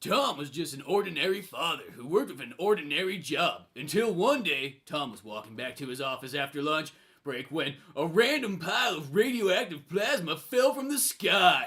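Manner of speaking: retro nineties-style narrator storytelling voice. Reading a listener's comic page aloud on request, in a nineties voice. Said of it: "read this in your nineties voice".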